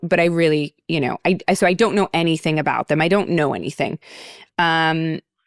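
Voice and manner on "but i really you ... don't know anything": ordinary delivery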